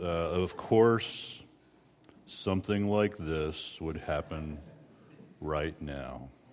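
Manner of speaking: low, soft, hushed mutter, full of gloom. Describing how an Eeyore type reacts when things go wrong, in Eeyore voice. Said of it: "I'll even say it in the Eeyore voice".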